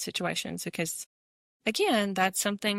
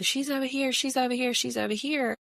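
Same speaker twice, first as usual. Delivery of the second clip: high-pitched screaming, repeated over and over; 6 semitones higher than usual. Retelling police officers at a scene screaming at them: imitating police screaming. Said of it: "they're screaming at us still".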